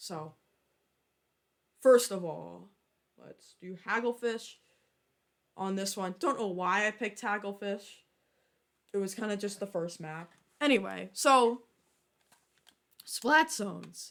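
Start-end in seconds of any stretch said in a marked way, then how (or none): 11.1-14.1 voice cracking mid-phrase. Speaker ranking game modes, voice cracking. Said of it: "voice crack there".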